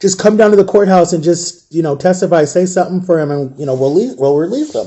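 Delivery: normal talking voice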